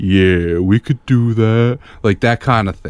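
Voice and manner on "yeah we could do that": seductive, flirtatious come-on voice. Imitating how an actor talks in these movies: Vin Diesel impression. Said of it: "he's trying to seduce a woman at a bar".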